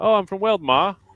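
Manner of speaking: put-on terrible English accent. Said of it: "That's a terrible English accent".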